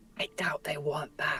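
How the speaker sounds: whispering softly. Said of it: "I kinda whisper".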